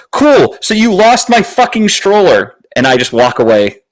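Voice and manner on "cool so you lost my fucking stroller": full-throated, very high, top-of-the-lungs yell. Retelling telling airline staff they lost the stroller: imitating yelling at top of lungs. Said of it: "I yell at the top of my lungs".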